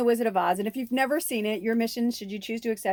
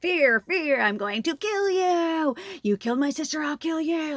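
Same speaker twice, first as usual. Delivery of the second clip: put-on menacing, vengeful, threatening voice; 6 semitones higher than usual. Retelling a scene between two characters, speaker is imitating a menacing threat. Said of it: "Like she's coming for you".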